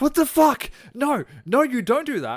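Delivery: very high, very loud scolding shout. After he repeated a joke with a slur, the speaker retells yelling at him. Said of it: "I started yelling at him like he was my kid".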